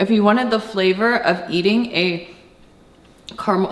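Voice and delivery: talking while chewing, mouth full. Taking a bite and describing the food, talking with mouth full. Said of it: "I'm talking with food in my mouth".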